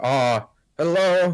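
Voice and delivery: high, loud, clumsy put-on Chinese accent. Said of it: "I'm so bad at making, you know, this Chinese accent".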